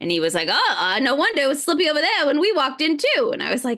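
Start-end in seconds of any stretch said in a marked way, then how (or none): 0.5-3.3 put-on, broad, laid-on pure New York accent. Retelling what the EMT who came said: imitating a New York accent. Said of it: "pure New York".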